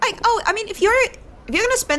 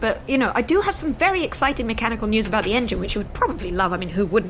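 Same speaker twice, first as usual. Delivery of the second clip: normal talking voice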